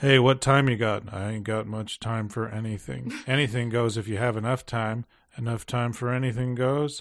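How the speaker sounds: mock dull, lifeless, uninflected monotone delivery. Criticizing a film's acting, the speaker mimics the other characters with flat monotone delivery. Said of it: "the way that this was delivered just seems so flat".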